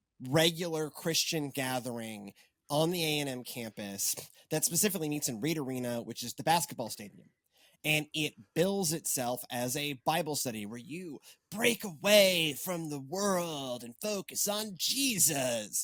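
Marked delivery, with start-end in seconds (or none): 11.5-15.9 put-on lazy, slow, drawn-out stoner drawl. Describing a campus bible study gathering, about to undercut it, in stoner voice. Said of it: "because I use my stoner voice".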